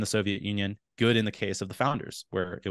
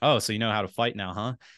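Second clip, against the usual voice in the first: playful, mock-joking tone. Telling how a friend reacted to hearing about jujitsu training, quoting his joking remark. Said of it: "he kind of jokingly said".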